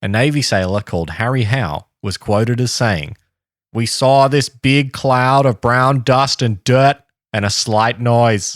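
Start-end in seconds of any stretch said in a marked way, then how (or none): 3.7-8.6 put-on Boston accent. Reading out a Navy sailor's quoted account, the speaker uses a Boston accent. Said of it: "This is a Boston accent".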